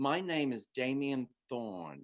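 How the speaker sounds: put-on British accent. Retelling giving a made-up name to people in local stores, put-on British accent. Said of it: "Like I'd put on a British accent".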